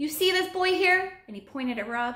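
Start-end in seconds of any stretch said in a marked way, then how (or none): 0.0-1.1 high-pitched shout, yelling out. A man points at a boy and shouts to a tiger; shouting. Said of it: "Bouchamp shouted".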